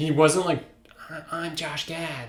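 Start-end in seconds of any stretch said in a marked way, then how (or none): 1.1-2.3 slow, plain, ordinary talking voice. Mocking how an actor usually talks: Josh Gad impression. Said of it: "or however he talks".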